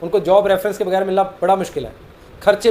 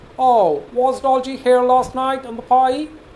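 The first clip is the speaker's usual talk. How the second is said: put-on American accent, spoken slowly; 5 semitones higher than usual. Showing how a native english speaker would say the same sentence, native english accent. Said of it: "अगर कोई अमेरिकन या ऑस्ट्रेलियन या इंग्लिश एक्सेंट में बोलेगा".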